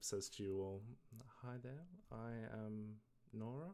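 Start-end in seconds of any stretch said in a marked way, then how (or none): 1.4-3.7 feminine voice, quieter. Voicing a creature greeting the group: female voice. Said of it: "so a female voice".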